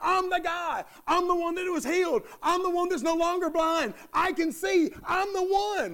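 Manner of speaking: high, eager, excited insistence, repeated. Retelling a healed beggar insisting to his neighbors: acting out excited insistence. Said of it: "Can you hear the excitement in his voice?".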